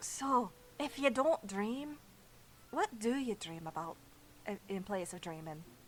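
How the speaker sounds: leaning-in half-whisper in a put-on voice. Playing a character who leans over to another before sleep: half-whispering in character. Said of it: "Epi just kinda leans over and whispers to Brock".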